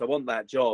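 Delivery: normal talking voice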